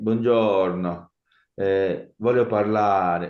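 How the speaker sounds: slow, over-the-top Italian accent, laid on thick. Showing how it would sound to speak Italian with a put-on accent: exaggerated Italian accent. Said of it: "no hago eso. Me siento ridículo".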